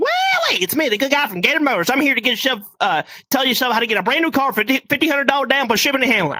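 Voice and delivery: put-on, stumbling car-commercial salesman voice. Retelling a Halloween costume bit, imitating a car commercial salesman. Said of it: "I just started randomly talking like".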